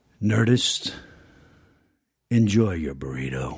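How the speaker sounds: very low, deep, slow husk from the diaphragm. Signing off the podcast as asked, in any manner: husky low voice. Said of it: "he did the husk part".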